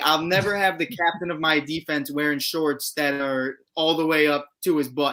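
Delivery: plain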